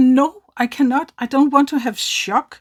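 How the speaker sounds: put-on distressed, upset shout, loud and high-pitched. Recounting refusing a treatment at a clinic: upset shouting. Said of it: "sorry, I'm shouting".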